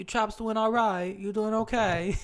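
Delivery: very high, loud attempt at a British accent. Retelling greeting British women met in Vegas, in an attempted British accent. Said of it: "That's all I got".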